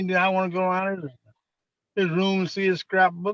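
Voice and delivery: ordinary delivery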